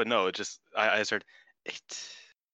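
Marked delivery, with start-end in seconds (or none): 1.7-2.2 the word eight breathed out as a whisper. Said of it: "you say eight so, like, breathily".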